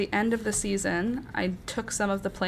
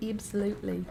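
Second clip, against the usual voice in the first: absolutely with New Zealand accent vowels; 5 dB quieter than usual. Trying to say absolutely in an imitated New Zealand accent. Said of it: "How do you say it in New Zealand accent?".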